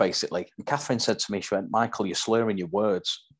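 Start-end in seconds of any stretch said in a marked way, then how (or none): none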